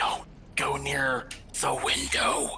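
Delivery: frightened, scared whisper. Turning to the group in a role-play scene to warn them, whispering. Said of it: "and I whisper".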